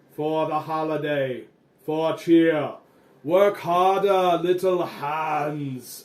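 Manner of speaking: big, booming, slow, loud, "hands" drawn out. Voicing an unseen figure driving elf workers: booming voice. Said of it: "you hear a booming voice say".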